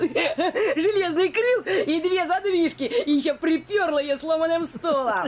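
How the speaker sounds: mocking put-on old woman voice. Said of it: "Неужели у меня такой противный голос?".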